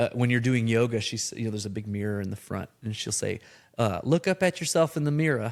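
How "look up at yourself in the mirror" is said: put-on Southern Alabama accent, pitched up. Quoting an Alabama yoga instructor's class instruction, imitating her Southern Alabama accent. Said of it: "a yoga instructor from Alabama, and I love her accent".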